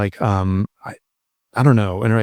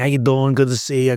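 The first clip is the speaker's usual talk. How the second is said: put-on strong New York accent. Describing fellow passengers after landing in Newark, the speaker does a heavy New York accent. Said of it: "these heavy New York accents".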